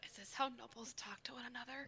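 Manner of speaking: very quiet, slightly high mutter under the breath. Playing a character among nobles on a ship, asking the others under the breath, really quiet. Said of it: "under my breath, really quiet".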